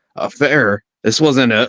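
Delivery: ordinary delivery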